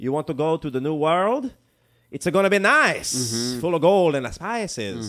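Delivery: loud, clumsy, bad put-on Italian accent. Imitating a recruiter pitching the new world: bad Italian accent. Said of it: "my Italian's bad".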